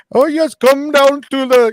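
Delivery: very high, very loud villain voice, belted out. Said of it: "in Darth Vader voice".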